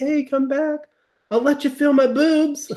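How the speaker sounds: mock, very high-pitched yell. Retelling a movie character yelling at her boyfriend, retelling a yell. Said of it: "She like starts yelling at her boyfriend".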